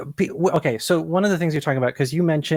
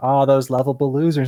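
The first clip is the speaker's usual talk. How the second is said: ordinary delivery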